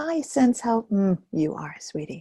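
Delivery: gentle, kind, soothing tone. Speaking to your own feeling as to a child or pet: kind, gentle tone. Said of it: "with a note of kindness in our voice, like you would say it to a child or a dog or a cat".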